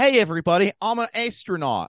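put-on heavy Philadelphia accent, pitched way up. Improvising a character on stage, speaking in a thick philly accent. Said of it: "all the characters have a thick Philly accent".

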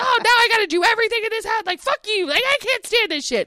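very high, fed-up yelling rant. Retelling mom going in during an argument: imitating mom yelling. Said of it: "so sick of her yelling at me".

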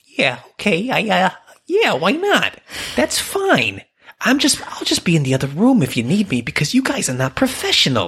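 put-on old-time mobster voice. Playing a character in a podcast bit with co-hosts: 1930s mafia gangster voice. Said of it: "I guess that's back to the gangster".

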